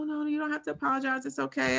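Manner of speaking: high, quick, soothing, reassuring nurse voice.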